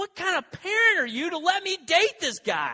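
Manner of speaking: high, loud yelling.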